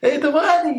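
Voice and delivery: very loud, high, shrill, over-the-top scream. Retelling her answer to the director's push to go bigger, re-enacting a scream. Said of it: "And I just like screamed".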